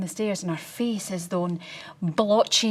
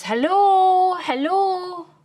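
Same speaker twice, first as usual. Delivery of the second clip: very high, raised, put-on telephone voice; 11 semitones higher, 7 dB louder than usual. Speaker retelling calling out on finding the door open, shouting in best telephone voice. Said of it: "in my best telephone voice".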